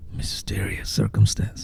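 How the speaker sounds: soft, hushed, secretive whisper. On a podcast, as if cutting a promo: whispered phrase. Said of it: "I gotta whisper that part".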